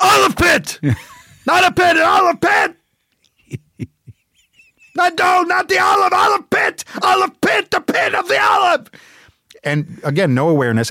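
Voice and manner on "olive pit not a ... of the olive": very high, shrill screaming, word hammered repeatedly. Retelling the dad yelling in the middle of the street, imitating dad screaming. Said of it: "started screaming the word olive pit over and over".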